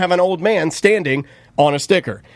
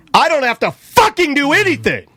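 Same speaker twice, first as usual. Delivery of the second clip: mock mad, defiant, pitched-up angry tone; 7 semitones higher than usual. Retelling what they said back to a man earlier, retelling an angry retort. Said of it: "I was already a little mad".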